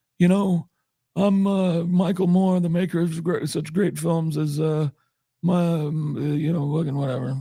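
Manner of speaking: put-on fumbling, rambling, high-pitched old man voice. Speakers joke about an old man voice; speaker does Michael Moore old-man voice. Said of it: "maybe this is just his old man voice".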